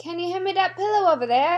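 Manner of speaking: put-on, fake Irish accent attempt. Doing an accent for friends to guess: fake irish accent.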